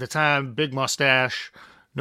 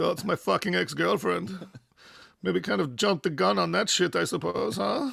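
high, gravelly, creaky voice; 5 semitones higher than usual. Imitating the German tour manager's way of talking: imitating Frieder. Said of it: "he fucking talks like this".

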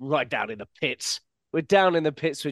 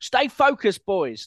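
pitched-up voice with a very proper English sound; 6 semitones higher, 4 dB louder than usual. Quoting a coach's training video that switches languages: Will Still's English voice. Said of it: "this sort of English voice just comes back".

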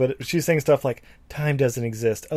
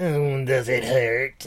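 creepy put-on voice, much slower. Describing the baby gin crawling out, quoting it in a creepy voice. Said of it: "the creepy ass voice".

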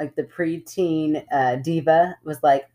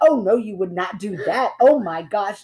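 mock, worked-up screaming outcry; 4 semitones higher than usual. Retelling her daughter watching TV, imitating her screaming at the TV. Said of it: "screaming at the TV like".

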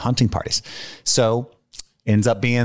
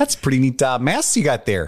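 put-on sing-song Canadian accent. Doing a Canadian impression after joking about Mounties: Canadian accent impression. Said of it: "That was my Canadian impression".

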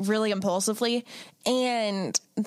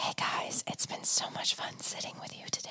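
put-on hushed whisper in asmr style. Doing the show's outro as a joke when asked: put-on ASMR whisper. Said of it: "outro as A S M R".

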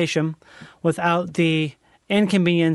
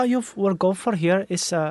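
poor fake Dutch accent. Chatting about how Dutch people sound in English, bad Dutch accent. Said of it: "that's not a good Dutch accent".

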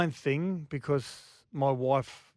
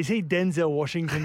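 ordinary talk

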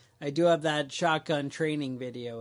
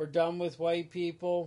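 ordinary talk, nothing marked

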